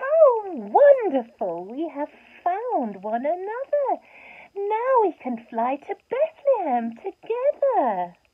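shrill, high, loud, joyful cry. Narrator reads the two angels linking arms together, crying happily. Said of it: "cried happily".

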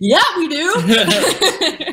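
high, very slow, eager and exaggerated. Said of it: "We were like".

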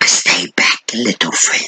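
hissed, threatening reptilian lizard-creature voice. Narrator reading the lizard creature's words as it holds a knife to its captive, hissing. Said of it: "the Marriott hissed".

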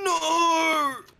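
very high, loud, long-held shout. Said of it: "You are so loud".

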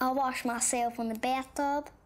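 put-on hillbilly character accent. A child asked to show a favourite voice, in a hillbilly voice.

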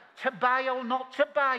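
big, high, loud, grand theatrical delivery in Brummie accent.

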